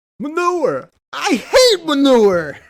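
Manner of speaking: very loud, high-pitched, belted, swooping all over. Quoting a line, the speaker slips into a Christopher Walken impression. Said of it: "Why are you doing Christopher Walken?".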